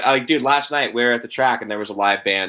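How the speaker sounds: ordinary delivery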